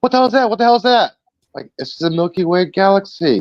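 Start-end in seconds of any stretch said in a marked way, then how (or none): 0.0-1.1 high, freaked-out, blurted yelp. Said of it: "People were freaking out like".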